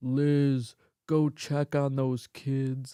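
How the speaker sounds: deep, loud voice of a big hulking man. Recounting a childhood night, the speaker quotes her father calling to her mom, imitating her dad's voice. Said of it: "his voice was like".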